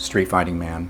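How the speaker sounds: usual speaking voice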